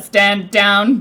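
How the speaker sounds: loud, flat, machine-like robotic monotone. Describing a machine that fires and moves toward you, repeat its very monotone instruction. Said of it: "a very monotone like instruction".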